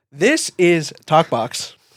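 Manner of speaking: slow, drawn-out, formal announcer voice with wide-ranging pitch.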